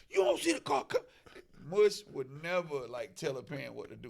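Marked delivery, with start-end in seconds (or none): 0.1-1.0 very high-pitched, loud scolding yell. Retelling yelling at a son to get out of the street: retelling yelling at son. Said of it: "I'm yelling at my son".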